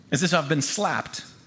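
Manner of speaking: plain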